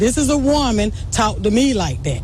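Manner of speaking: normal talking voice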